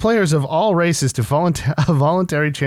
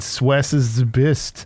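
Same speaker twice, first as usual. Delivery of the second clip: mocking a slip of tongue. Repeating back how another speaker misspoke: imitating a misspoken line. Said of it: "You said".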